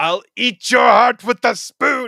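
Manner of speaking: put-on very high, very loud, shrill comic yell, funny accent. Quoting a movie villain's line after being told to say it: Alan Rickman yelling. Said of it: "in the funniest accent ever, yells out".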